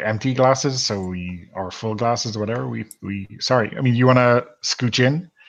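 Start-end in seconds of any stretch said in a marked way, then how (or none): none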